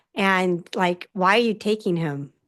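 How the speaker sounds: ordinary talk, nothing marked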